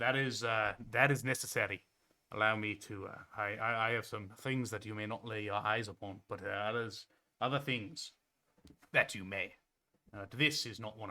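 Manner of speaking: put-on Scottish-accented voice, halting with hesitations. Voicing a character working on the other player: Scottish accent. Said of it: "Yeah, Scottish".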